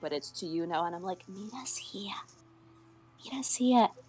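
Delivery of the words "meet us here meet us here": high, hushed whisper. Now speaking directly to the other player's character, still whispering. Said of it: "I'm still whispering".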